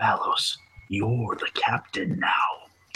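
soft, hushed whisper, close to the ear. Leaning in to tell valos he is captain now: whispering. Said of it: "I lean and whisper".

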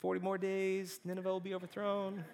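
mock indifferent, high-pitched, bored monotone drone. Acting out Jonah walking through the city: Jonah, mock-bored monotone. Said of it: "he really doesn't care about the Ninevites. So he's like".

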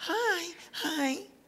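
high, soft, nice, polite church voice. Speaking to a church audience, demonstrating the nice church voice. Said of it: "you've got your nice church voice".

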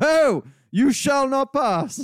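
very high, shrill, very slow, grand, drawn out, loud. Retelling a pub visit by an actor with a staff: imitating Ian McKellen as Gandalf. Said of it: "he'd come into his local pub and go".

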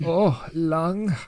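lustful put-on German accent. Acting out a man going through a monster's organs, leering put-on German accent. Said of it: "in this absolutely kind of sexually touched German accent of this sort of thing".

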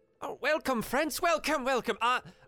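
high, slow, welcoming little otter wizard voice. Voicing a small otter wizard welcoming guests to his tower: Traxigor voice. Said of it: "he comes waddling over and he says".

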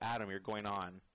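ordinary talk

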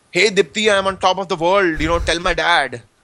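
play-acted, mildly half-shouted. Retelling his phone call to his wife from 29,000 feet, retelling his own shout. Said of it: "like I was shouting".

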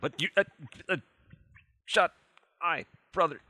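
fear-frozen babbling. Tabletop player whose character is frozen with fear keeps talking: babbling, frozen with fear. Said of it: "Frozen with fear, continuing to babble".

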